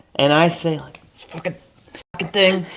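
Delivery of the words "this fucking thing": mock, frustrated under-breath mutter, much higher. Explaining where someone picked up cussing, retelling a frustrated mutter. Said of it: "like under my breath to myself".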